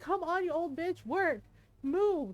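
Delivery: crying, yelling, pitched high. Retelling a moment, the speaker quotes what they yelled at themself while crying: retelling a crying yell. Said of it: "yelling at myself being like".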